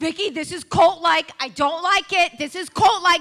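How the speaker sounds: acted yelling. Retelling how he behaved in the front row at church: imitating someone yelling. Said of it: "you're yelling at me going".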